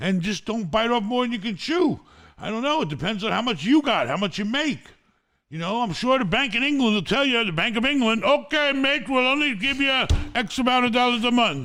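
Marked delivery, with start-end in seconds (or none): 8.2-11.7 bad, failed put-on English accent. Imitating the bank telling a first-time buyer their limit: bad english accent. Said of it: "I don't even know how to do the English accent".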